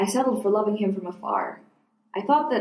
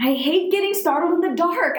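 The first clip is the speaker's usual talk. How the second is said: raised-pitch defensive voice; 8 semitones higher, 3 dB louder than usual. Narrator reads her own reply after he teases her about being brave: defensive. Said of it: "I said defensively".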